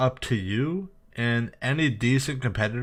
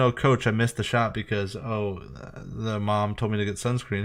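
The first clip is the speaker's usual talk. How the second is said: ordinary delivery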